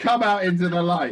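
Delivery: loud, high commanding voice. Switching to a backup plan after failing at sneaking: authoritative. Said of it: "I'm gonna sound authoritative and be like".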